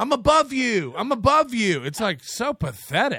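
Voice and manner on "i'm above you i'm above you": high, shrill, screaming voice. Describing a professional comedian screaming at a guy with a day job: imitating someone screaming. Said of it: "literally screaming at a guy".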